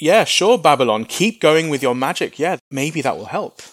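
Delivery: mock sarcastic, taunting, jabbing tone. Explaining a passage, voicing God addressing Babylon: acting out sarcastic tone. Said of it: "he's being sarcastic".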